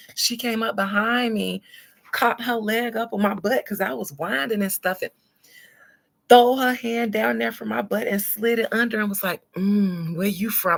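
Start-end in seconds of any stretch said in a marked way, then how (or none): 9.5-10.8 very deep voice, dropped way down low. Retelling what a woman on a boat asked in her ear: imitating a very deep voice. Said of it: "in this deep-ass voice".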